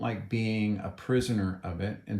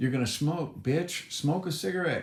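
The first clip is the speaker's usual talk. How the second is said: nasty little gnome voice, high screeching scream; 7 semitones higher than usual. Retelling how an imagined ugly yard gnome screamed at him: imitating a screaming yard gnome. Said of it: "a little ugly yard gnome who used to scream at me".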